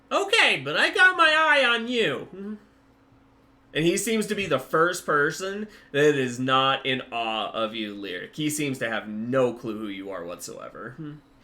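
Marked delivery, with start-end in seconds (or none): 0.1-2.5 high-pitched shopkeeper voice, higher and louder. Voicing Puddlefoot answering a customer in the shop: high-pitched Puddlefoot voice. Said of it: "I'll just stop doing the voice".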